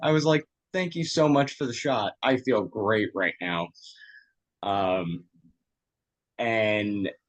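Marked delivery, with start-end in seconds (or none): none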